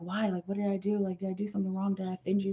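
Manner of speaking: put-on rapid, stressed, worried speech. Acting out his expected reaction during a reading: imitating fast stressed talking. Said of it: "talking fast".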